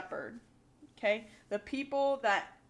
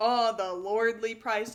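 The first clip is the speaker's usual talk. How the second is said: sarcastic, mocking tone, dripping with sarcasm; 4 dB louder than usual. Explaining a line about the lordly price, acted out in a mock-sarcastic tone. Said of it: "he's being sarcastic. He's like".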